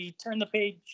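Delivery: ordinary delivery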